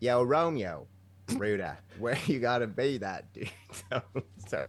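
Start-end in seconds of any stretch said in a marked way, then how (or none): 0.0-3.5 very slow, attempted Australian accent. Asked to say Juliet's line as an Alberta lady to a man, attempted Australian accent. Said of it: "I try to do Australian".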